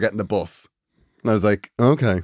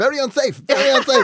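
frantic, very high, panicked repeating; 13 semitones higher than usual. Retelling how the guide reacted under the rock: imitating a panicking guide. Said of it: "And he was panicking".

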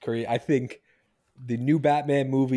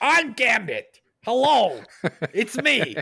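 very high, swooping, sing-song comedian voice; 11 semitones higher, 4 dB louder than usual. Imagining for friends how he would play the role in a movie, as Gilbert Gottfried as Gambit. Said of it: "Gilbert Godfrey's in costume".

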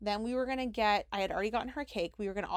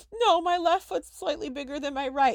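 mock tearful sobbing, high and loud; 5 semitones higher, 8 dB louder than usual. Retelling answering a man's question in a room: retelling own crying. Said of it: "i'm like crying".

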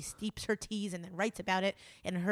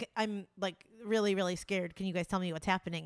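plain

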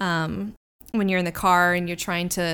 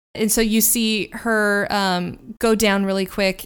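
ordinary talk

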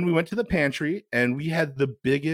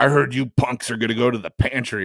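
acted tough-guy voice; 3 semitones lower than usual. Retelling what a friend said about the pantry: imitating Jamie's tough voice. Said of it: "she really talked like with that voice".

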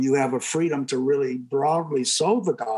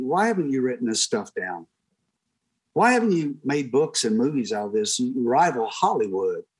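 ordinary talk, nothing marked

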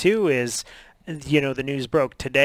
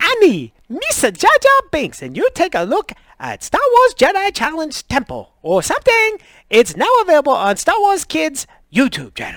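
very high, loud voice with swinging, swooping pitch; 14 semitones higher, 7 dB louder than usual. Trying the impression again, announcing the show: Jar Jar Binks voice. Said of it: "that was much better".

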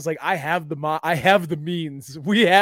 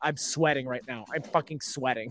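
put-on mutter under her breath, lower and quieter; 4 semitones lower, 9 dB quieter than usual. Retelling what a lady in a long queue said: imitating a mutter under her breath. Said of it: "I heard her under her breath".

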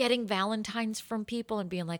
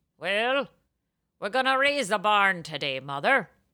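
put-on voice with a slight Irish accent; 5 dB louder than usual. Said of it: "it's a little bit Irish".

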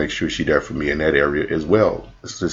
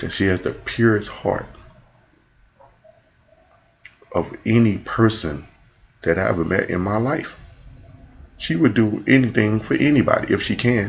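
voice welling with emotion, pitched up; 5 semitones higher than usual. Speaking about a girl, getting emotional. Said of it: "I'm getting emotional when I talk about it".

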